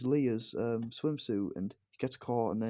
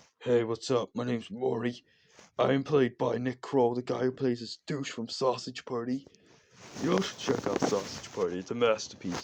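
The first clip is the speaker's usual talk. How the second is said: put-on monster character voice; 3 dB louder than usual. Speaker describing their favourite character in a show, doing a Murray impression. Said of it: "I have to do an impression of him".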